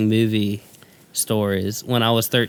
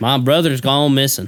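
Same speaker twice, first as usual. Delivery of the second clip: put-on Southern accent; 3 semitones higher, 4 dB louder than usual. Recalling an actor's film role with friends, Gary Oldman southern-accent impression. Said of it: "It's kind of southern in this".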